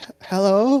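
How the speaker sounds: very high, feeble, croaking female voice, pathetic. Voicing a voice from a manhole answering a call: croaking, pathetic female voice. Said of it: "a croaking, pathetic voice reply".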